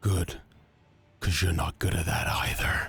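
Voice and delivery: soft whisper, barely voiced, taunting. Narrating a scene, the storyteller voices a woman whispering to the player's character. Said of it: "puts her hand on your cheek and whispers to you".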